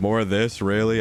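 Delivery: mock-sarcastic delivery. Recalling quitting games after Fallout 3, retelling own sarcastic reaction. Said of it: "That was sarcasm".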